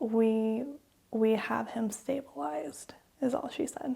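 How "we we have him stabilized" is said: plain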